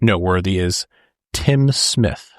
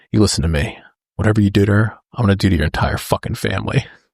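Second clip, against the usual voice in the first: put-on whisper. Retelling a movie interrogation scene: imitating a whispered threat. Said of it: "whispers in his ear".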